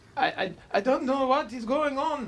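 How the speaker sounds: high-pitched put-on Swedish accent.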